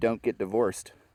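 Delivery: ordinary delivery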